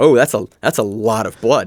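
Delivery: ordinary delivery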